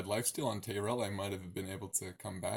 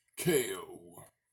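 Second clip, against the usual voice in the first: badly done game show host announcer voice; 3 semitones lower, 4 dB louder than usual. Describing an attack landing as a knockout, in a bad game show voice. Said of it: "that was my my bad game show voice".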